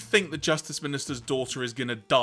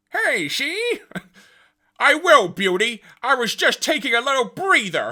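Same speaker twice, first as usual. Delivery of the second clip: nasty, shrill, very high, very loud put-on voice; 12 semitones higher, 10 dB louder than usual. Getting back into character mid-scene, a horrid character voice. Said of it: "It's such a horrid voice as well".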